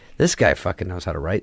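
normal talking voice

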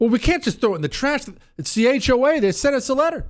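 high, fast, rattled, panicky worried voice.

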